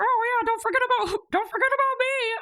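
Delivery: very high, puppet-like voice. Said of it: "me doing Kristen's Muppet voice".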